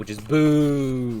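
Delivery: put-on booing noise.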